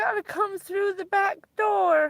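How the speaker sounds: mock very high, tearful, crying voice. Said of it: "she's crying on the phone".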